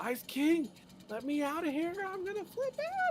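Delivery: shrill, climbing, very high-pitched acted scream. Retelling a cartoon scene, imitating Finn screaming. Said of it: "He starts screaming".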